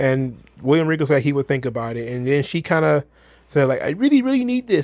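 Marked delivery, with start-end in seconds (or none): 3.8-4.9 high, desperate, begging voice. Recapping a woman asking for a match next week, imitating desperate pleading. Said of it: "sounded like almost like a hostage".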